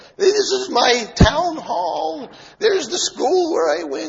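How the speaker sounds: put-on cracked, croaky old man voice, very high. Retelling a joke, voicing an old man showing the captain around, croaky old-man voice. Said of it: "is why it sounds so croaky".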